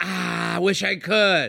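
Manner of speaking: mock insincere, fake-polite regret. Imitating someone declining a far-away party invite: mock insincere regret. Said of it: "and they're like".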